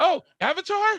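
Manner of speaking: put-on, very high-pitched feigned astonishment. Showing someone how to say a word in a surprising way, mock surprise. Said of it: "try to say it in a surprising way".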